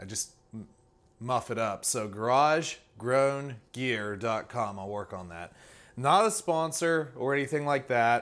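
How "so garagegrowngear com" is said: unhurried, slow delivery. Naming the website the order came from to listeners, saying it slowly. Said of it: "I have to say it slow".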